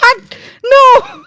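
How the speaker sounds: mock screaming. Retelling own reaction to a surprising game result: imitating own scream. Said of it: "I'm gonna stop screaming".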